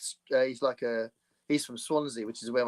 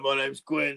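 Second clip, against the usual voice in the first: voice like a phone's virtual assistant; 3 semitones higher than usual. Playing a personal assistant named Gwen: deep-voiced Gwen assistant voice. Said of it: "with a deep voice".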